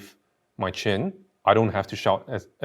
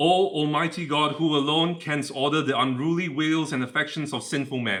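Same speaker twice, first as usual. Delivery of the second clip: declaimed, projected, high-pitched, meant to carry far; 6 semitones higher than usual. Demonstrating volume over distance with a prayer: projected very loudly. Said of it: "I'm gonna speak as loud as possible so that you can hear me nice and clear".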